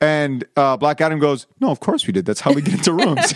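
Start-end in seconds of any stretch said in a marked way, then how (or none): 1.6-3.3 dry, matter-of-fact, with swooping pitch. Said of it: "a deadpan, like, straight face".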